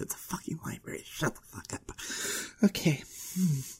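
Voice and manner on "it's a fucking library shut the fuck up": fast, very soft, hushed whisper. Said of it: "Gotta be quiet anyways".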